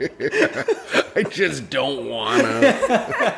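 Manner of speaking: mocking, very slow, high, laughing.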